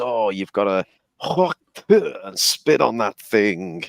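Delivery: put-on thick, broad Southern American accent. Retelling a viral interview clip, quoting the girl in a broad Southern accent. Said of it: "in this broad Southern accent".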